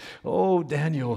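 mournful, grieving, lamenting cry. Retelling how a man cried out to daniel at the lions' den, acting out a lament. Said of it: "he cried out with a lamenting voice".

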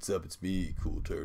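chill, easygoing, laid-back cool dude voice. Imitating a dragon turtle who wears glasses: cool turtle voice. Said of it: "he's got, like, glasses on, and he's like".

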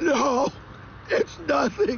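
crying, tearful voice. A man asked whether he is crying denies it, crying. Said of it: "are you crying?".

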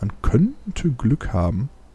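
könnte stressed hard and said slowly. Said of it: "Betonung liegt hier auf könnte".

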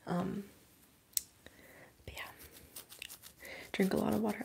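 whispering.

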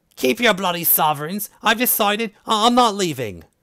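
furious, angry screaming and shouting. A woman at the window screams at visitors who knocked: angry screaming. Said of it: "an angry woman appeared at the window and began to scream at them".

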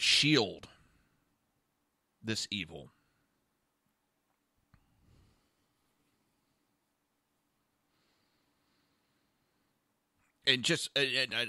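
halting, stumbling, stammering and stuttering speech. Speaking to the camera while admitting to stammering and stuttering. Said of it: "I'm stammering and stuttering all over the place".

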